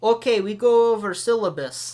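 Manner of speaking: put-on slow, loud Russian accent in broken English. Retelling what a teacher said in class: attempted russian accent. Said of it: "this little Russian guy".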